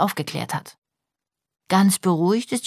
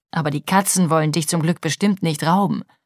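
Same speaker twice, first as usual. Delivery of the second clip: plain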